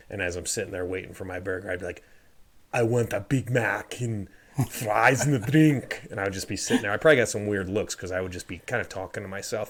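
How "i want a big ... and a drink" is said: very slow, drawn-out, loud put-on Austrian accent. Retelling practicing his order while waiting at the counter, imitating an Austrian accent. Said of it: "I actually started sounding Austrian".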